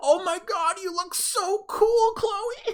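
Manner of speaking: starstruck, very high-pitched, excited gushing. Describing a guy who gets blushy staring at her: imitating excited gushing. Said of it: "he gets like blushy and like he's all excited".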